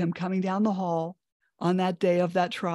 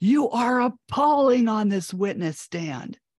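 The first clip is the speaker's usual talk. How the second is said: put-on, lightly yelled, stern scolding tone; 4 semitones higher than usual. Retelling what a man yelled at the speaker on the witness stand: retelling a booming yell. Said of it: "like he really boomed his voice".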